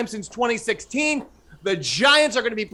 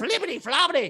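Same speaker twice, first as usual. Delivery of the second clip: silly, nonsense babbling puppet voice; 3 semitones higher, 3 dB quieter than usual. Mimicking a caller's garbled last sentence: Fraggle Rock voice. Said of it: "doing some sort of Fraggle Rock routine".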